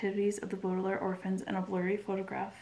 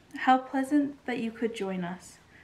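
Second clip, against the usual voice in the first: syrupy, cloying, sickly sweet raised voice; 4 semitones higher, 5 dB louder than usual. The hook-handed man greets Violet at the tower room: sickly sweet voice. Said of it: "the hook-handed man said in a sickly sweet voice".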